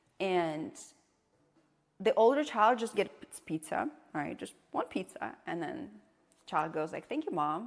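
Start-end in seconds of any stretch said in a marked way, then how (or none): none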